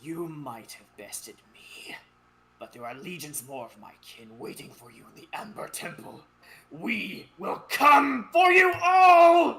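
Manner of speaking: very loud, booming, swooping angry sneer. Bested in the player's subconscious, he threatens them all: angry sneer. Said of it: "angrily he sneers".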